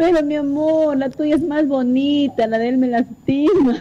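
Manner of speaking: mock crying, slow. Telling a story where he starts crying and answers her, imitating someone crying. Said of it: "Y él se pone a llorar y le dice".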